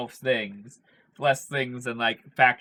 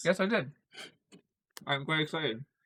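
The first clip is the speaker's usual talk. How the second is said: mouth full, higher and quieter; 4 semitones higher, 6 dB quieter than usual. Answering another speaker's question while finishing Doritos: eating while talking. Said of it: "I'm trying to finish my bag of Doritos".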